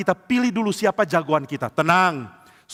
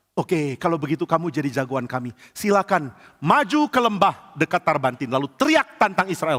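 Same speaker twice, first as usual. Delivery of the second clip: ordinary delivery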